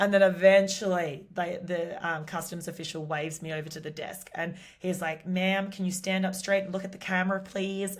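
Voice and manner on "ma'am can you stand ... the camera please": crappy, bad put-on American accent. Retelling what a customs official said: bad American accent. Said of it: "excuse my uh, my crappy American accent".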